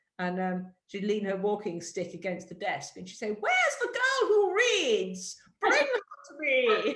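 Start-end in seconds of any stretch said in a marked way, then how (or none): 3.3-7.0 put-on very high, sing-song, grand posh old lady voice. Recalling a regular customer at the Harrods bookshop, imitating a posh old lady. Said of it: "She was very posh".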